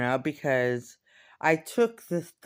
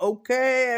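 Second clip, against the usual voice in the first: bouncy, lighthearted tone, higher and louder; 9 semitones higher, 5 dB louder than usual. Retelling own reply to a serious friend: imitating own bouncy lighthearted tone. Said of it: "all bouncy and".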